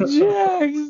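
fake exaggerated crying voice. Imitating the Mayor calling out on the car microphone: overdramatic crying Mayor impression. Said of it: "And he's crying".

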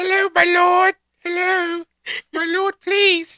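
very high, loud, begging peasant voice. Talking about dressing up for the Renfest, the speaker does a peasant voice. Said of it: "[name] has a fantastic peasant voice".

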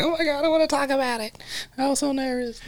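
very high, soft gushing voice, laughing through words. Describing a clip of the Bailey sisters discussing a scene, imitating the Bailey sisters laughing. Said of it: "and they're like laughing".

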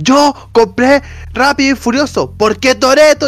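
mock shrill, very high, stretched-out, drawn-out yelling. Speaker acts out a man in a viral video: retelling a shout. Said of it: "Y se pone a gritar".

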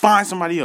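put-on aggressive tone. Retelling their own phone call, the speaker acts out getting aggressive. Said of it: "I'm getting really aggressive".

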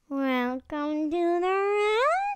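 eerie, creepy clown-like voice. Podcast hosts take turns saying the welcome in their creepiest voice; creepy clown voice. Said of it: "kind of a creepy clown vibe".

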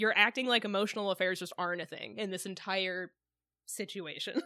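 ordinary talk

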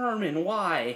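fake dramatic anguish. Retelling being ignored, acting a betrayed movie protagonist: mock dramatic betrayed plea. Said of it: "like I was the protagonist in a movie".

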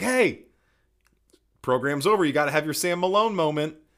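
loud, mock called-out yell. Telling how they yelled to everyone after the show ended, retelling a yell. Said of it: "I yelled out".

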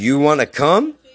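put-on sarcastic tone. Retelling what he said to a guy, quoting his own sarcastic line. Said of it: "I hit him with the fucking sarcastic".

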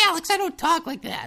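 very high-pitched nagging voice. Describing his mom's reaction to his impression of her: impression of his mom. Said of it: "that's just the impression I do of my mom".

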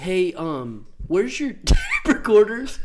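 mock clueless voice, high and loud.

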